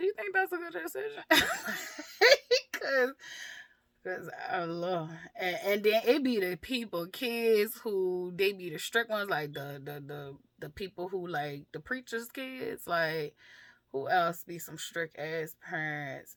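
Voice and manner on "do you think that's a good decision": quick, high-pitched, mocking calm tone. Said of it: "come in there with the".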